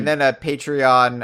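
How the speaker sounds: ordinary talk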